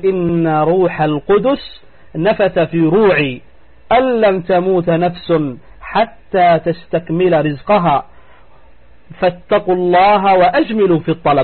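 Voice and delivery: plain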